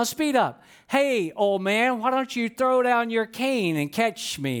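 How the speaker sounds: put-on sarcastic voice. Imagining a running watch speaking to a slow runner: put-on sarcastic voice. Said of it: "not equipped with a sarcastic voice".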